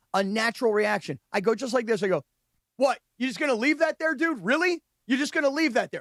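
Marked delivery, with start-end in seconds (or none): 2.8-6.1 mock raised, disbelieving, indignant voice, rapid. Retelling confronting a guy who left something there, retelling a raised voice. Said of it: "I raised my voice".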